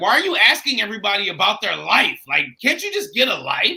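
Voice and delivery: put-on curt snapping tone. Retelling how a lady at the show snapped: imitating a lady snapping. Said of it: "the lady snapped on me".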